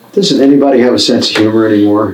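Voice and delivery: ordinary talk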